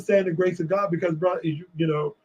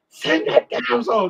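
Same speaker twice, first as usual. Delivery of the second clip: mock scream, higher; 5 semitones higher than usual.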